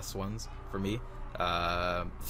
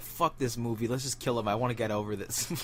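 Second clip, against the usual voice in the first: normal talking voice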